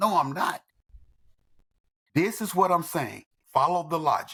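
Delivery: ordinary talk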